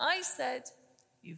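plain reading voice

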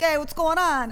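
put-on Brooklyn accent. Speaker demonstrates how he talks around his mother and aunt, thick brooklyn accent. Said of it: "Jimmy's Brooklyn accent makes mine worse".

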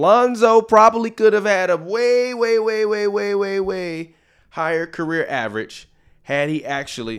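screaming. Talking about a player missing free throws: screaming. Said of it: "let me turn my mic down 'cause I'm screaming".

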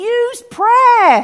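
high, urgent calling out. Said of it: "he's saying".

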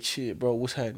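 ordinary talk

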